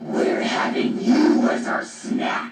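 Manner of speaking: booming demon-like voice. Recounting an episode, quoting Kimba's line in Kimba's loud demonic voice. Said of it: "says of a loud demonic voice".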